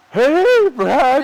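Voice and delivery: voice breaking, very high and loud. Imagining nervously greeting a famous actor on set: put-on voice crack. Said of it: "voice crack".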